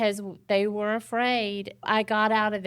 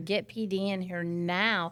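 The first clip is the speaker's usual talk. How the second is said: usual speaking voice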